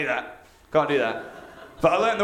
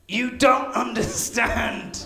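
acted, really upset, tortured anguish, high-pitched; 6 semitones higher than usual. Retell what he said to his best friend, imitating someone really upset. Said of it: "he sounds really upset".

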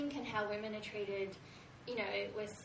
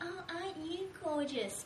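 put-on, very patronizing, talking-down tone, high pitch; 9 semitones higher than usual. Describing subtle sexism she faces, mimicking a patronizing voice. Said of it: "really patronizing voice".

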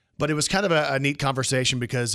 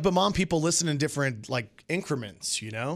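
ordinary talk, nothing marked

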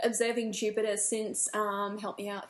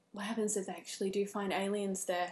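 re-enacted whisper, very quiet, quieter; 4 dB quieter than usual. While reading a news article, the speaker retells her brother's question, retelling a quiet whisper. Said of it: "my brother just kind of quietly whispered".

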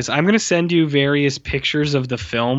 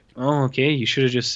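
play-acted, totally deadpan, fast, flat, zero enthusiasm; 3 dB quieter than usual. Retelling a scene's reaction shot, giving a flat, unenthusiastic reply. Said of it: "with just totally no enthusiasm".

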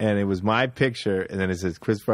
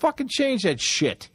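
put-on screaming, higher. Retelling snapping at the guy who books the shows: imitating own screaming.

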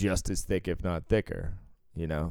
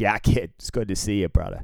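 put-on heaviest Boston accent, laid on thick, sing-song; 4 dB louder than usual. Quoting a man who lives beyond Springfield, Massachusetts: thick Boston accent. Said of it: "he has the thickest Boston accent".

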